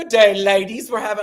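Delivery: mock weird British accent. Retelling how the cast spoke at croquet: imitating a weird british accent. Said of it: "speaking in some weird British accent".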